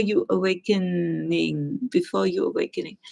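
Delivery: ordinary delivery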